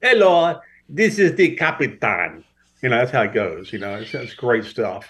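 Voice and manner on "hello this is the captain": put-on Italian accent, sing-song. Imitating the captain's announcement: put-on Italian accent. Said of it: "He's usually Italian when he gets on there. It's like".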